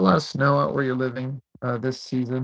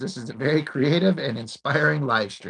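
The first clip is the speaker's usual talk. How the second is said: normal talking voice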